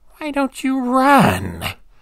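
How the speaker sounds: very high giggling voice, words stretched out. A spider-like creature drags itself toward the terrified narrator, giggling voice. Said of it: "it asked in a giggling voice".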